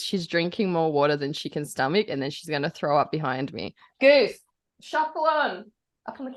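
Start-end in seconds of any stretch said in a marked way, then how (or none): 4.0-6.4 high-pitched calling out. Telling a dog named Goose to get on the couch: yelling. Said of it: "I just have to yell at Goose".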